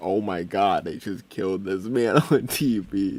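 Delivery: tearful, crying outburst, put-on child crying. Retelling a childhood reaction to a TV explosion: imitating own childhood crying. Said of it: "I was crying so hard".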